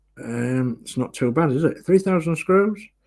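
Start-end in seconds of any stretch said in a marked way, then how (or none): 1.9-2.8 quickly rattled off, fast and pitched-up. Saying a large screw count fast so it sounds less bad: said fast. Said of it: "If you say it fast".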